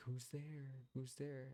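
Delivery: feeble, weak, high, faint voice. Retelling a hotel neighbor answering a knock on her door: imitating a weak voice. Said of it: "very weakly had said".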